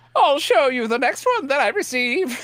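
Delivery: strange, high put-on old-lady voice, British accent. A man puts on an old lady voice while others tease him: strange British old-lady accent. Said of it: "your British accent is very strange".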